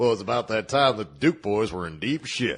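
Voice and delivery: country storyteller narrator voice. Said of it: "me and [name] like to sit in a recording booth going".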